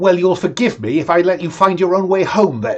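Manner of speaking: cross, heated, angry tone. Voicing Tubby before he storms out: Tubby storming off, angry. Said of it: "And he storms out the nightclub".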